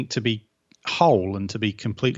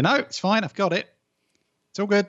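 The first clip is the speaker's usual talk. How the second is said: very high, short, clipped, mock dismissive delivery; 11 semitones higher than usual. Retelling being overloaded and turning down her offer of help, acting out a clipped tone. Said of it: "my tone gets a little clipped".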